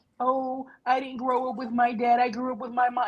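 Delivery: put-on waterworks, fake tearful crying, victim voice. Describing a woman who hides behind victimhood, imitating her waterworks with mock crying. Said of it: "she's pulling out the waterworks of".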